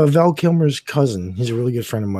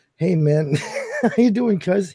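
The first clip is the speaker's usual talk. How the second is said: mock giggly, laughing through the words, swooping pitch; 5 semitones higher, 3 dB quieter than usual. Act out Val Kilmer's voicemail to his cousin, imitating Val Kilmer giggling. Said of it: "He's giggling".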